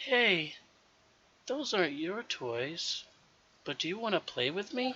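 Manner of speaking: put-on hushed, half-whispering child voice. A child asks a newcomer to play with her: hushed, half-whispered child voice. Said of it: "The child speaks in a hulled, whispered voice".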